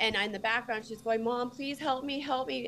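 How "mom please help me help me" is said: mock, tearful, sobbing, pleading voice. A mother recounts a threatening call, imitating her daughter's crying plea in the background. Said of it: "crying and, and pleading for me".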